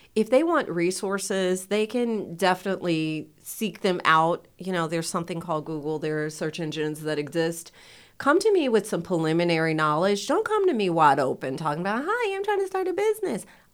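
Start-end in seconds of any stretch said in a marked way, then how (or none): 12.0-13.4 very high, squeaky little cartoon mouse voice. Speaker mimicking people who ask for business help without preparing: Mickey Mouse voice. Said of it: "sorry to give the Mickey Mouse voice".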